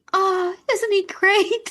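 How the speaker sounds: put-on very high, sweet, gushing little-girl voice. Retelling a little girl praising a boy to her dad: imitating a sweet little girl. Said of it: "his daughter was just so sweet and just like".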